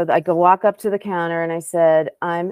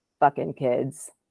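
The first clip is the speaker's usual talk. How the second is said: mock bone-dry deadpan, low, flat muttered; 4 semitones lower, 5 dB quieter than usual. Telling a story about someone's reaction, quoting what he said: retelling a deadpan remark.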